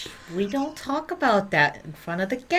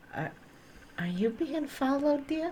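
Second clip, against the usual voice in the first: very quiet, hushed, pitched-up murmur; 8 semitones higher, 8 dB quieter than usual. In a role-play, a player's character leans close to another character, very quiet. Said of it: "say this very quietly".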